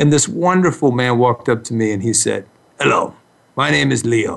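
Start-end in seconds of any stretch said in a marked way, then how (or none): 2.8-4.4 friendly put-on Russian accent. Retelling how a man introduced himself: imitating Leo's Russian accent. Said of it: "he had this wonderful Russian accent".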